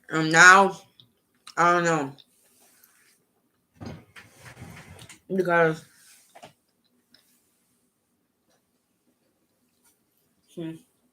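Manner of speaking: munching while speaking, mouth full. A speaker recounting a past relationship, talking while chewing. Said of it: "sorry, I'm munching".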